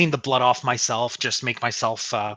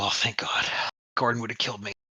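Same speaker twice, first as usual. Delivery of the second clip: quick mutter under the breath, to oneself; 5 dB quieter than usual. Retelling a moment, the speaker acts out muttering under their breath. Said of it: "And under my breath, I go".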